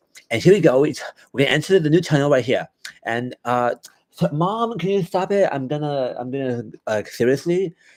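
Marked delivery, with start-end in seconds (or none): 0.3-5.5 annoying YouTuber narration voice, pitched higher. Complaining to a friend about a guy, imitating his annoying Minecraft YouTuber voice. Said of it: "that fucking annoying ass voice that a bunch of those like Minecraft YouTubers have".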